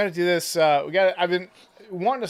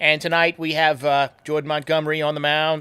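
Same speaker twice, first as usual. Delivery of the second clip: put-on Boston accent, politician-style delivery. Recalling his podcast intros when a pitcher took the mound, he uses his Mayor Quimby JFK voice. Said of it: "in my little Mayor Quimby J F K voice".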